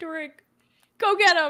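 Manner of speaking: choked-up cry, shrill, very high and very loud. Voicing a character urging an ally on while a companion lies dying: choked up. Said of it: "Catherine is pretty, like, choked up".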